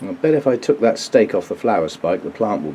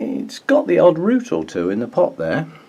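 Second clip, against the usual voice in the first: wry, sarcastic, sing-song understatement; 7 semitones higher than usual. Describing the roots of a potted orchid, sarcastic. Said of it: "And now I'm being sarcastic again".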